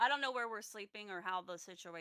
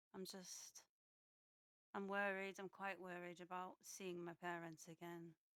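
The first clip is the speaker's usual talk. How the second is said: hushed whisper, much quieter; 9 dB quieter than usual. In a role-played scene, back turned to the other person: whispering. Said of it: "and I'm gonna whisper".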